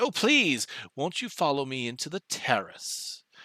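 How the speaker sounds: scratchy, swooping little creature voice, chattering. Game master voicing a small ice creature inviting you inside, scratchy high-pitched creature voice. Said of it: "scratchy and high pitched".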